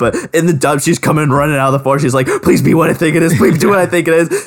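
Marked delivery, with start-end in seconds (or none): 2.4-4.5 mock, high, wildly over-the-top eager gushing. Retelling a dub scene running out of the forest: imitating Hanji's over-the-top excitement. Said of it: "She is over the top in the dub on this".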